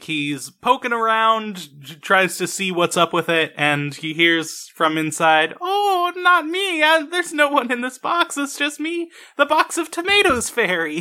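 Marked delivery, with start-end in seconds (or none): 5.6-11.0 very high-pitched, frightened, terrified voice. Retelling a scene where Italy hides in a box: terrified Italy voice. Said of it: "this is Italy being terrified and hiding".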